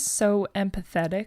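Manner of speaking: ordinary delivery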